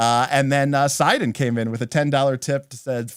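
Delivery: ordinary delivery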